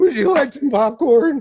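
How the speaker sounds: put-on loud, very high, squeaky, cracking teen voice. Teasing a co-host about going through puberty, doing the Simpsons movie-theater guy voice. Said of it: "like the movie theater guy from Simpsons".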